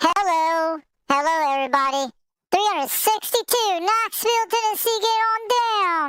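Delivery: high, squeaky cartoon chipmunk voice. Calling out a knoxville, tennessee radio sign-off in a chipmunk voice. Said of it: "That's the Almond Chickmunk voice".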